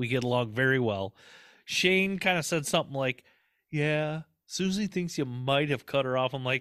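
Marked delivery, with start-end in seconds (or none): none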